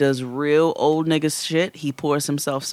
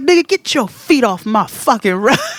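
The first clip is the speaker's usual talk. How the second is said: mock loud, high, angry cursing yell; 8 semitones higher, 7 dB louder than usual. Retelling a scene where a father yells at his kid: imitating a father yelling at kids. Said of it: "he turns up on his kids".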